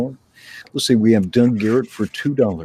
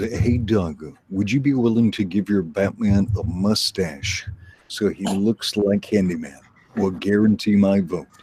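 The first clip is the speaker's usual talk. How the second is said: ordinary talk, nothing marked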